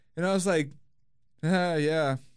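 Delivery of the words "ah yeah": mock bone-dry deadpan, driest possible flat tone. Retelling own reply to a stranger's joke: imitating own dry reply. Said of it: "the driest".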